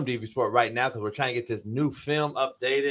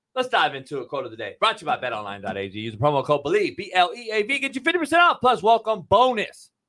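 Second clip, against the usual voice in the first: fast auctioneer-style patter, rattled off; 5 semitones higher, 3 dB louder than usual. A podcast co-host runs through the sponsor read, fast auctioneer-style. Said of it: "I should be a motherfucking auctioneer".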